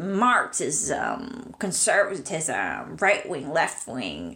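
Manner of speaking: very slow, drawn-out lecturing voice, every word dragged. Imitating a lecturer heard in a recording: Terence McKenna impression. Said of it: "my impression of him".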